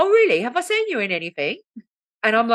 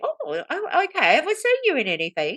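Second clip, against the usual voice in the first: polite put-on British accent, pitched up; 9 semitones higher than usual. Retelling a woman's reaction to meeting a drag queen, in a british accent. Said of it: "You're not allowed to do British accents".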